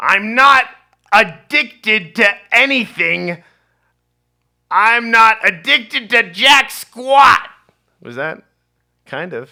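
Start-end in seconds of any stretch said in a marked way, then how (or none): 0.0-7.5 slow, drawn-out, very loud screech. Asked to say a line in Gilbert Gottfried's voice, speaker does a Gilbert Gottfried impression. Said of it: "What would you like me to say in Gilbert Godfrey's voice?".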